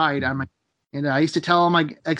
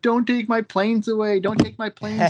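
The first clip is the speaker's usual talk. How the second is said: put-on tearful, crying childlike voice, higher pitch; 6 semitones higher than usual. Retelling being an eight-year-old on the way to hospital: imitating own childhood crying. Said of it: "just crying, going".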